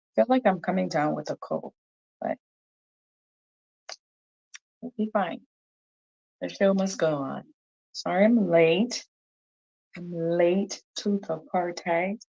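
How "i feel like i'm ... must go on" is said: quick, slightly cracked voice. Greeting listeners at the start of the show while coming down with a cold: voice a little cracked. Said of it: "My voice is a little bit cracked".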